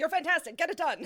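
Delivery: put-on loud, high old-timey news reporter cadence. Joining in imitating R F, the head of the studio: old-timey news reporter voice. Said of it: "talks in the way that, like, old-timey news reporters talk".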